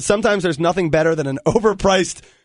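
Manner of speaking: plain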